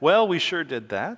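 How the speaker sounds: condescending, patronising, talking-down teacher-like tone. Speaker imitates the condescending tone a teacher once had: mock-condescending teacher tone. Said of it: "in that sort of condescending tone like my teacher had".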